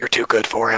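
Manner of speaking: whispered character voice. Narrating a scene where Ashta hugs a character and speaks, Ashta whispering. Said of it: "just whispers in your ear".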